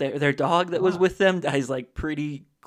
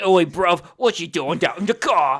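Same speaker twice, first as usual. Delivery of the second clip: put-on loud, slow, rough, trashy British accent; 4 semitones higher, 6 dB louder than usual. Imitating one of those trashy british people: trashy british accent. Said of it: "one of those trashy British people. It's like".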